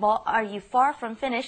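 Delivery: ordinary talk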